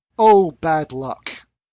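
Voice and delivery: put-on grave, solemn, sympathetic tone. Retelling what Missus Tom said after the slime incident, imitating her grave condolence tone.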